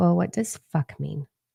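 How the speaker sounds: normal talking voice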